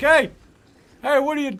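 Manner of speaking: very loud, high, put-on talking-dog voice. Speaker imagines the listener's dog peeking in the window, talking dog voice. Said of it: "your dog is peeking in the window like".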